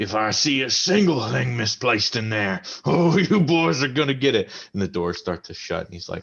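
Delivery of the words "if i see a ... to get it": high, loud, barking dwarf voice. A dwarf peeks in as the doors swing open and warns you: barking dwarf. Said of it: "barks at you and goes".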